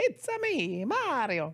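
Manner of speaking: very slow, stretched, high and swooping. Saying the catchphrase that the movie needs: Mario voice. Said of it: "He's gotta say".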